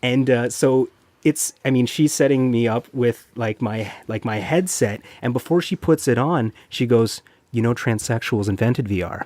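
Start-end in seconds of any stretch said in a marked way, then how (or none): 7.5-9.2 soft, hushed, sultry stage whisper. Retelling what a worker said while fitting a headset: imitating a sultry half-whisper. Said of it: "kinda whispers into my ear, like, all sultry".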